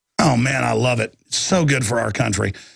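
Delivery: sarcastic enthusiasm. Reacting to an article on police growth rates: sarcastic. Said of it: "I'm being sarcastic, folks".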